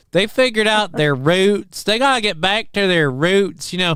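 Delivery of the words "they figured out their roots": put-on southern drawl, much higher pitch. Teasing the other speaker about a word they just said, imitating a southern drawl. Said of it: "You got fucking southern drawl there".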